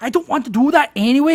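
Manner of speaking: put-on Scottish accent, very high and loud. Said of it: "I love the guy's accent".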